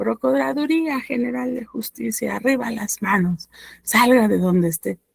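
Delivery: mock police-style shout, called out loudly. Retelling someone flinging the opened door wide, imitating them shouting. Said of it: "la avienta y empieza a gritar".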